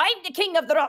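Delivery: put-on very high, loud, little dwarven kid voice. Voicing a dwarven kid standing on a rock: dwarven kid voice. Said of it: "this dwarven kid's just like".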